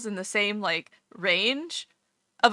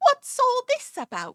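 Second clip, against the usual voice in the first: very high, flat, meek fake Cockney accent. Mocking the voiceover in Dragon Quest: imitating a flat, false Cockney accent. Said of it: "flat, milquetoast, like, false Cockney accent".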